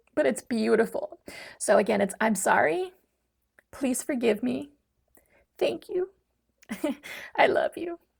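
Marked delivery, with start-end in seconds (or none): 2.2-8.0 choked-up, catching voice close to crying, pitched up. Repeating the forgiveness prayer aloud once more: choked up, near tears. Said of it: "I always get choked up when I do this".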